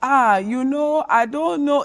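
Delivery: put-on very slow, dragging Nigerian accent. Showing the accent of first-generation Nigerian parents: imitating a Nigerian parent accent. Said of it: "the Wakanda type of Nigerian accent".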